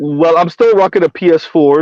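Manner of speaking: usual speaking voice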